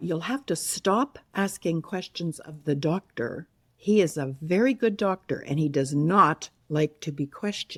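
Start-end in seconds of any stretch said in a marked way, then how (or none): none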